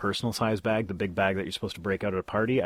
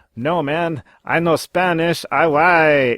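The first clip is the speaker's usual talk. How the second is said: atrocious, booming, drawn-out, put-on Spanish-speaking accent; 9 semitones higher, 12 dB louder than usual.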